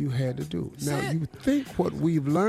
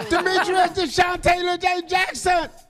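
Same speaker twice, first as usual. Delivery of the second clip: put-on yell, higher and louder; 5 dB louder than usual. Retelling how a girlfriend yelled a name through speakers: imitating girlfriend yelling a name. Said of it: "my girlfriend yell out my name".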